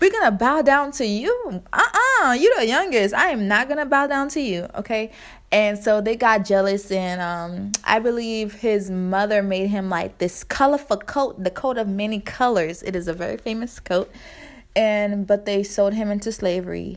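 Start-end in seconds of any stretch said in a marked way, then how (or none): 0.0-5.1 slight, put-on country accent with higher pitch. Retelling jealous family members refusing to bow to the youngest, a little country accent. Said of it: "I'm sorry if I sound a little country".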